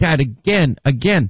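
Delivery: ordinary delivery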